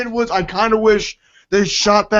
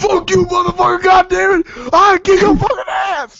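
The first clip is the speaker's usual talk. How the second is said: fake, shrill, very high, furious yelling; 10 semitones higher, 4 dB louder than usual. Reacting to another speaker's jab about a movie: mock furious yelling. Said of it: "Sorry, headphone users".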